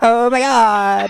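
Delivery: put-on very high-pitched Valley Girl voice, exclaiming. Explaining what he hears when people say a phrase, the speaker does a Valley Girl impression. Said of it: "Like this".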